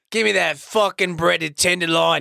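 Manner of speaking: put-on sudden, accidental British accent. Telling a ghost story and quoting the ghost, in an accidental British accent. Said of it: "Why am I British all of a sudden?".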